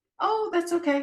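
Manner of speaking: squeaky, very high, placating voice. Demonstrating how women placate, the speaker says it in a high-pitched placating voice. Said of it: "My voice went higher".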